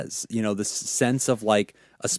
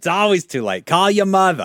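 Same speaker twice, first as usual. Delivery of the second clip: put-on New York accent; 8 semitones higher, 6 dB louder than usual.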